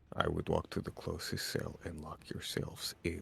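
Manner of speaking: hushed, muttered whisper under breath. During a tabletop game, a character warns the others in a hushed whisper under his breath. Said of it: "sort of said in a hushed whisper under his breath".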